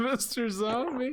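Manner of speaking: high, slow, drawn-out, mocking sing-song.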